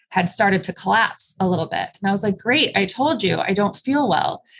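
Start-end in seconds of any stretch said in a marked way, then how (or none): none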